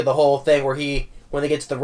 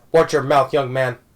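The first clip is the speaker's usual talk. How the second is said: put-on, scolding elderly voice. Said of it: "goes and says in his, in his voice".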